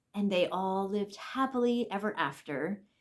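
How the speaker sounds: ordinary talk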